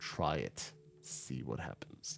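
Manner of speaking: very quiet, hushed whisper full of contempt. Game narrator voicing an enemy captain answering a threat, dripping with scorn. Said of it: "his voice is dripping with scorn".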